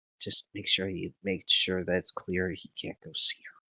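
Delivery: very soft, quiet whisper. Passing an instruction to just one person in the group, whispering. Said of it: "I'm going to go ahead and whisper".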